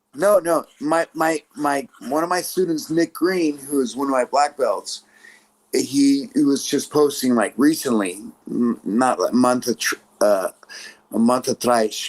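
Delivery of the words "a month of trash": put-on Brazilian Portuguese accent, lower pitch. Telling a story about a student, slipping into a rio portuguese accent. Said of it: "Do you like how I mixed my Portuguese?".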